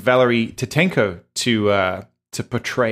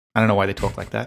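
usual speaking voice

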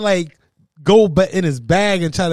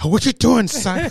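put-on would-be tough guy voice, higher pitch; 4 semitones higher than usual. Picturing someone trying to act tough: Terrence Howard acting tough. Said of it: "imagine Terrence Howard, Howard come over here trying to act like he's tough".

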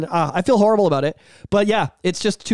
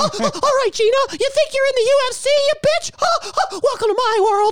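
put-on cartoon mouse voice. Acting out Mister Mouse scolding Gina: Mister Mouse voice. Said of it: "Okay, Mister Mouse".

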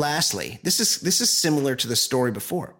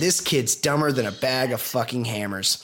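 normal talking voice

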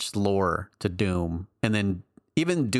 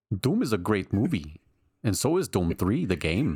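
put-on Swiss accent on English. Imitating a listener from Switzerland who loves Doom 3, in a Swiss accent. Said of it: "he's from Switzerland. And that's what he sounds like".

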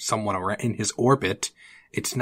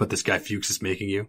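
put-on stoic, creepy voice. Retelling how Taylor questions Barry: imitating Taylor's stoic creepy way. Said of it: "very stoic, like, creepy way".

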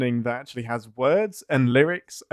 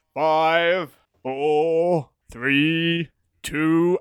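grand, dramatic announcer voice; 3 semitones higher than usual. Speaker demonstrates how he hears every countdown, Thunderbirds countdown voice. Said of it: "in a Thunderbird's voice".

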